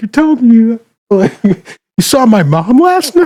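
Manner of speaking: very high squeaking voice that cracks and breaks. Describing a clip from a show, acting out a guy's line with a cracking voice. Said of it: "he's make his voice cracked".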